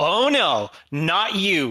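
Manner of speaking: shouting. Voicing a waitress as an armored drow walks in: shouting. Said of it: "she has just shouted at a drow".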